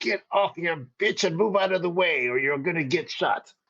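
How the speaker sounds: put-on loud, high-pitched accented English. Yelling a warning at Betty with a gun drawn: yelling in accented English. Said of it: "I'm gonna yell to Betty in my accented English".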